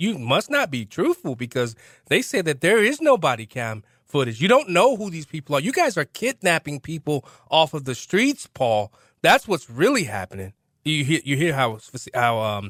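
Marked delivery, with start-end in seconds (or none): none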